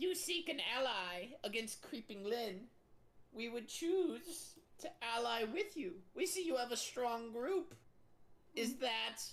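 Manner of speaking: put-on goblin character voice. A goblin of the Dead Ringers tribe offers the party an alliance, in goblin character voice. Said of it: "Alternative goblin steps up and says".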